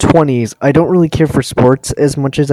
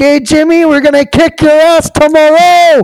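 very high-pitched screaming; 12 semitones higher, 4 dB louder than usual. Recounting a Maple Leafs fan in a Tim Hortons, imitating someone screaming. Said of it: "he was just screaming in the Tim Hortons".

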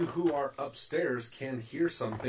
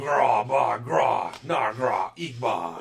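very slow, gruff, guttural, rough giant voice; 7 dB louder than usual. Voicing giants talking downstairs: gruff guttural giant speech. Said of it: "You hear the gruff, guttural speech".

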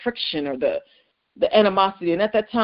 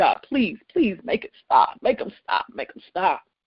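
tearful, broken, desperate crying voice. Recalling a night of pain and begging God, retelling crying out to God. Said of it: "and I'm just crying".

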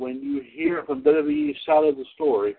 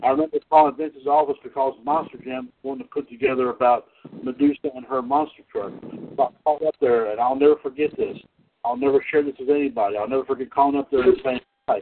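ordinary talk, nothing marked

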